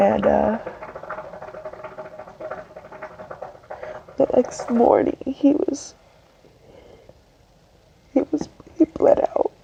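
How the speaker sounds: crying while talking. Apologizing to the audience for being so emotional, crying while talking. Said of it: "I'm crying".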